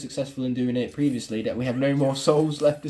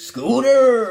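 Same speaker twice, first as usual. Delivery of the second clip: put-on pirate voice, very loud, high shout; 9 semitones higher, 9 dB louder than usual. Reading a name aloud in a put-on game voice: pirate voice. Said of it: "I'm saying it like I'm a pirate".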